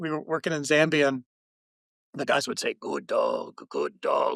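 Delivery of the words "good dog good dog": very low, very slow, swooping rumbly voice. Showing how dog handlers in Zambia praised their dogs: low rumbly voice. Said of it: "like this, you know, in a low kind of rumbly voice".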